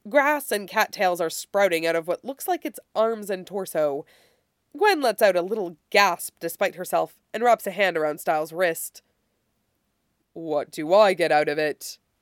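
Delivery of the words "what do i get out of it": deep, surprisingly clear, slow creature voice. Narrator reading the boggle's question to Stiles, in a deep, clear creature voice. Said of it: "Its voice is deep and surprisingly clear".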